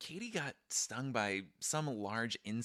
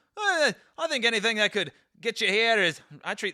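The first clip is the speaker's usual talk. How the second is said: put-on very high-pitched, loud Scottish accent; 13 semitones higher, 12 dB louder than usual. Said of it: "he's Scottish now".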